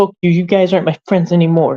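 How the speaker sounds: mock childish rage, high-pitched tantrum. Retelling what Jeff said, like a kid raging at a video game: imitating Jeff raging like a kid. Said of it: "like a kid, like, raging at a video game".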